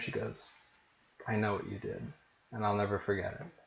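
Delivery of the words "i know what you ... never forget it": hushed, soft half-whisper close to the ear. Describing how she leans in close to your ear: half-whispering in your ear. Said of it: "she kind of whispers in your ear".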